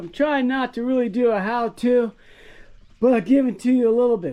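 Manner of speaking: winded, catching breath. Speaker addresses viewers while catching breath; out of breath. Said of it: "as I catch my breath".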